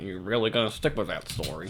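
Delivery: grave, stern, unyielding voice. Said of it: "That is a stern voice from Chris Hansen".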